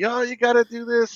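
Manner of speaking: put-on very high-pitched, yelling child's voice. Retelling how the oldest kid yelled at the other two while playing: imitating a kid yelling. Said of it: "my oldest was yelling at the other two".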